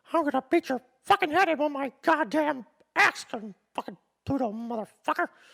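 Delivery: high-pitched belting. Jokingly threatening listeners who don't rate the podcast: Mickey Mouse voice. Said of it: "Hopefully that sounded like Mickey Mouse".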